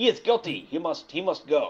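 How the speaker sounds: slow, poor attempt at a German accent. Acting out the Germans demanding to try him: attempted German accent. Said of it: "I can't do a German accent".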